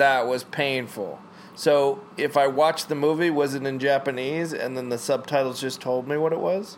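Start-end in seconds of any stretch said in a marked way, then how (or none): none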